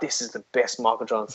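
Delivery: quiet, low fake commentator hype. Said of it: "they're like".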